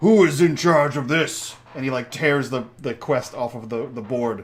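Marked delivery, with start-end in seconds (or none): 0.0-1.6 big, loud, booming bellow. Narrating a fantasy game, voicing a sword-bearing character in a loud booming voice. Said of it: "in a loud, booming voice".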